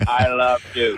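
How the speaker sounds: put-on low, groggy morning voice.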